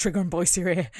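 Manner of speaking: frantic, panicked, alarmed voice. Retelling how a visitor's arrival is announced: imitating a panicked announcement. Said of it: "Rodney runs in all panicked".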